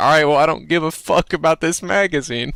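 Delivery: said through a laugh. Retelling own reply to a salesman: retelling own words while laughing. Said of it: "kinda laughing with him".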